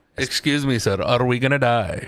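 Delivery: put-on Indian accent, done for laughs. Asked to do an Indian accent on the show, the speaker tries one. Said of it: "Can I hear your Indian accent?".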